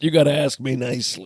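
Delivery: hard-nosed, stern colonel delivery. Quoting a line from A Few Good Men: Jack Nicholson impression. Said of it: "Is that a good impression?".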